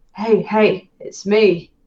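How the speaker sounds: speaking in a whisper. Kneeling down to greet a ragged child in a cargo bay: whispering. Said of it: "I kneel down and I whisper to him".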